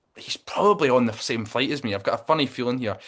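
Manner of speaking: usual speaking voice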